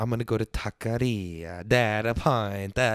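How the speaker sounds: Spanish words with Italian-sounding pronunciation. Naming the taqueria they'd rather go to, Spanish words in Italian accent. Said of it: "saying Spanish words like an Italian".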